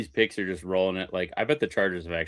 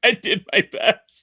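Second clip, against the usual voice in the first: mock crying, higher and louder; 14 semitones higher, 9 dB louder than usual. Retelling a comedy skit about crying in the mirror: imitating Dane Cook crying. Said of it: "that, uh, Dane Cook skit where he's like, when you're just, like, crying and looking in the mirror".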